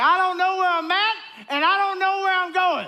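very high, loud, yelling cry. Retelling being lost while driving with the whole family: imitating own past yell. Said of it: "I just yelled out".

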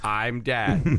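robotic put-on voice. Introducing a special guest: Stephen Hawking robot voice. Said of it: "That's the best robot voice I could do".

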